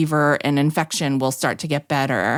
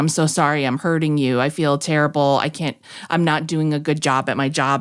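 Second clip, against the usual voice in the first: mock-crying old man voice. Retelling how the old man who couldn't place her IV apologized, imitating him crying. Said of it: "He started crying".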